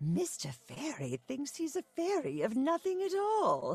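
put-on very high, swooping old-woman mid-Atlantic accent. Recalling a character she created, an old woman: old woman transatlantic accent. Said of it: "an old woman who had that kind of transatlantic accent".

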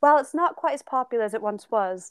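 fake British accent, put on for laughs. Reading aloud from a british article for fun, in a put-on british accent. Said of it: "I'm going to read it in an accent because I think it's funny".

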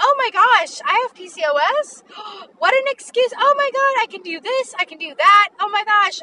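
very high, over-the-top, fake positive tone. Acting out what toxic positivity would say: mock over-the-top positivity. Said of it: "Do you see the tone of my voice?".

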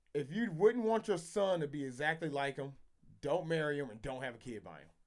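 ordinary delivery

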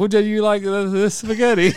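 put-on Italian accent. Explaining how words can hint at an accent, demonstrating a put-on Italian accent. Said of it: "I was Italian, I'd be like".

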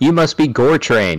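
loud, high-pitched shout. In a role-playing game, a player's character shouts out to him, shouting out. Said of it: "I I shout out".

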